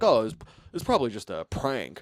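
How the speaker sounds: put-on English accent. Speaker quoting people on an episode they watched, imitating an English accent. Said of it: "They're saying it in a, uh, uh, English accent".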